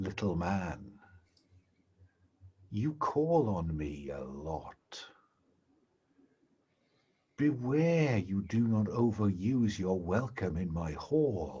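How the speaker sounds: low, hushed half-whisper, close to the ear. Narrator voices a half-whisper heard in the player's ear, half-whispering in your ear. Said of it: "you hear a whisper in your ear that says".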